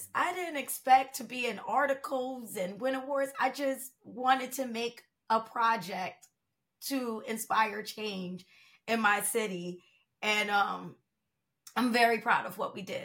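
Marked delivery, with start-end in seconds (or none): 3.4-13.0 emotional, overcome, voice welling up. Speaking about a project to inspire change in the city, getting emotional. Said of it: "Sorry, got emotional".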